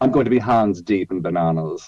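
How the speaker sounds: poor put-on British accent drifting into Italian. Repeating the other speaker's words back in a bad British accent. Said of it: "that wasn't a very good British accent".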